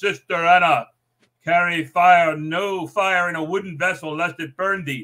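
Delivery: mock booming, loud, slow calling voice. Retelling a story's ending, a background voice calls out to sister anna, loud. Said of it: "this loud voice says".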